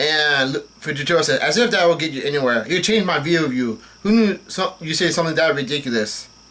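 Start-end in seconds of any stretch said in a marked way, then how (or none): none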